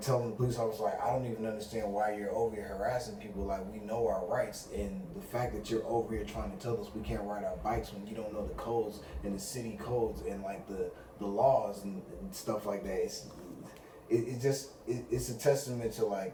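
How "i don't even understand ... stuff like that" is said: ordinary delivery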